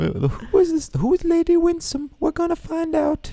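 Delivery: put-on English queen accent. Co-host, talking about Bridgerton with listeners, speaks in an English queen accent. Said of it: "That's my English queen accent".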